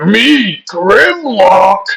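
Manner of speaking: acted high dumb caveman voice, drawn-out me. Explaining the Dinobots' cartoon speech pattern, doing Grimlock caveman voice. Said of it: "Grimlock's most famous catchphrase is".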